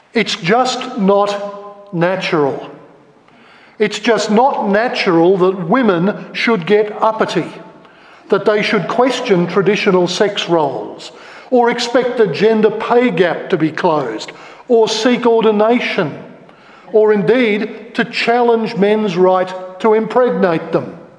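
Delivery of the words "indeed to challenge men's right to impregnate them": ordinary talk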